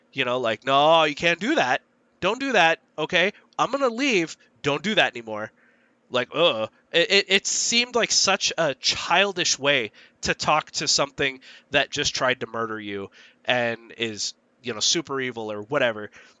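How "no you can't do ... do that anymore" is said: put-on acted condescending scolding voice, as if to a small child. Mocking how the characters talk to a villain: older brother scolding a little kid. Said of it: "like an older brother would talk to, like, their little kid".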